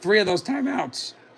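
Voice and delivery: quick, soft voice cracking mid-sentence. Commentator calling a Rams–Seattle game, voice cracking. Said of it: "voice crack".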